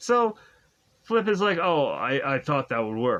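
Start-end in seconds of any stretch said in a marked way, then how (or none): 1.6-3.2 really deep, low voice, dropped way down. Retelling a scene, voicing Flip's reply to Nemo as a Jason Momoa impression. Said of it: "just like a really deep voice".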